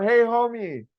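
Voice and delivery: very high, loud, shouted yell. Acting out someone calling to a Homelander cosplayer: imitating a yell. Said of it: "you just yell".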